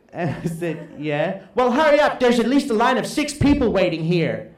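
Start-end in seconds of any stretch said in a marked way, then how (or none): 1.5-4.3 loud, mock Dutch accent. Retelling a voice outside the door while the speaker was inside: loud dutch voice. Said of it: "this loud Dutch voice is going".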